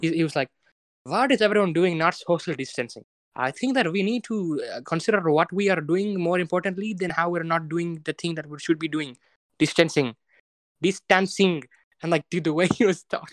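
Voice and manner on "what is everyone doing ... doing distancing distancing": put-on Indian English accent. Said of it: "I'll try to replicate it my best".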